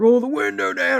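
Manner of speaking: harsh, barked, loud, rough, high scream. Retelling how a cop at the car window ordered them: imitating a cop screaming. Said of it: "he screams at Vicky".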